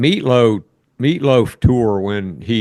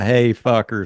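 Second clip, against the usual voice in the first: normal talking voice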